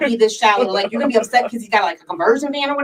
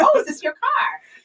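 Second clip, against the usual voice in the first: mock trying-hard casual cool, pitched very high; 11 semitones higher than usual. Retelling asking a man at his van about his car, retelling acting real cool. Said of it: "I'm trying to be like real cool".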